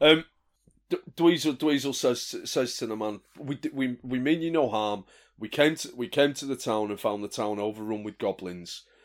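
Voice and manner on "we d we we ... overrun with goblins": normal talking voice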